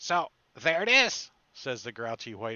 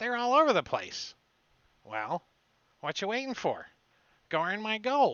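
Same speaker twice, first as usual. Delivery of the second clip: very high, gruff gnome voice; 10 semitones higher than usual. Narrating the scene, the speaker voices the gnome in a gruff gnome voice. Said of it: "the gruff voice of the gnome".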